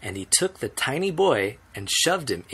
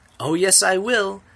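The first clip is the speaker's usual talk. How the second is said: little, high, squeaking voice; 8 semitones higher, 4 dB louder than usual. A narrator reads Mike Teavee answering Mister and Missus Teavee in a tiny squeaky voice. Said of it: "squeaked the tiny voice of Mike T V".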